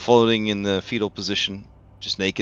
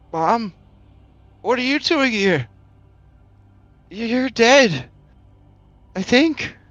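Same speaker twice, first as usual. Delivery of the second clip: very high, crackly voice as through a speaker; 4 dB louder than usual. In a story, the voice from a speaker answers the weeping grandma: crackling speaker voice. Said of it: "you hear the crackling voice say".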